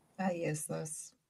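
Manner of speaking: sounding defeated. Admitting to using the word the others want banished: defeated. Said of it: "You sounded so defeated".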